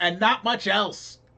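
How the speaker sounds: high shout. Voicing a character riding away who shouts back at the group: shouting. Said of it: "and he shouts".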